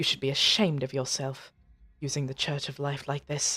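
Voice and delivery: hushed, low, soft, discreet half-whisper. A player casts a message and says this, in a bit of a half-whisper. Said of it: "in a bit of a whisper".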